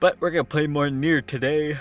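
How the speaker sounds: speaking through a yawn. Streamer talking to viewers, yawning while speaking. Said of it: "I keep yawning".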